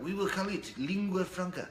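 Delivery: terrible put-on French accent. Quoting how the French speak, in a bad French accent. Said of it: "that's a terrible French accent".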